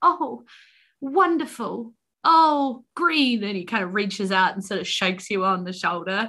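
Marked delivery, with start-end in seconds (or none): 0.0-3.4 very slow, loud, high, drawn-out delighted outburst. Retelling how Mr. Honeycutt reacts as he pulls it toward him: retelling Mr. Honeycutt's loud joy. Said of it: "Probably the loudest he's been".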